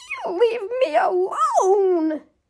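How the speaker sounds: frightened little squeak, high and drawn out. A little goblin shaking with fear answers, squeaking. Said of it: "he squeaked".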